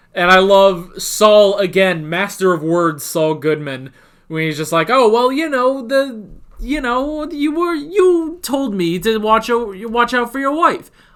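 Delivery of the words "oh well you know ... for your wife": put-on laid-on Brooklyn accent, pitched up. Speaker recounting a show scene, quoting Saul Goodman, in Saul Goodman Brooklyn accent. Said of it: "I sort of give uh, Saul more of a Brooklyn accent".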